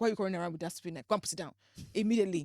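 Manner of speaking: put-on sharp, commanding scolding voice with Nigerian accent. Retelling a mom's reaction to running with a knife: imitating mom scolding. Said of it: "my mom is like".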